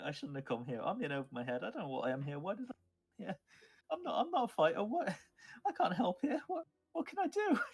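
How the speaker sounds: very high, swooping speech, sobbing through every word. A trembling character carried over someone's shoulder speaks, sobbing while talking. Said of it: "like sobbing".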